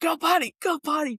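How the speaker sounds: put-on, high-pitched, impatient, insistent yell. Retelling urging the dog to go when in a rush: retelling own yelling at dog. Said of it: "yelling at him to go".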